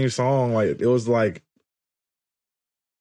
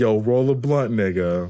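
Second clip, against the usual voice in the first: ordinary talk, nothing marked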